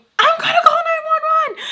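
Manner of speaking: very high-pitched, loud, frantic shriek. Retelling a tense moment at a door: imitating a scream. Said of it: "I scream".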